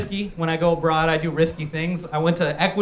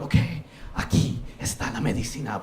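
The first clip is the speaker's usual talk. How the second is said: soft low whispering. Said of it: "his sons are all whispering to us".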